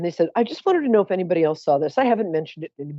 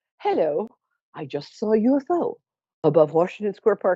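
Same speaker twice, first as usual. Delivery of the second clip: mock measured, sensible, theater-trained stage voice; 3 semitones higher than usual. Retelling your phone call to the police, in a reasonable theater-trained voice. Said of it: "in my very reasonable, sort of theater trained voice".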